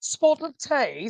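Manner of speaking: bad put-on Australian accent. Trying out an accent and failing: bad attempt at an accent. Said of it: "I'm terrible".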